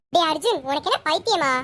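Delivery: ordinary delivery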